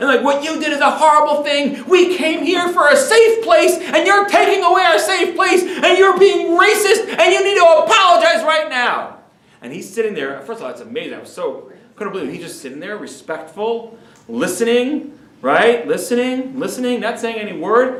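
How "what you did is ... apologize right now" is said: acted, very high-pitched yelling tirade. Retelling students yelling at a professor: imitating students yelling. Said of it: "they're yelling at him".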